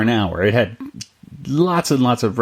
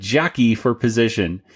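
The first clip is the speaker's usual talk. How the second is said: ordinary talk, nothing marked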